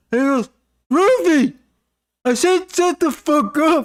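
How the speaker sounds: very high, drawn-out, furious yelling. Retelling how a guy yelled at his barking dog, retelling a loud yell. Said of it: "he's getting really loud".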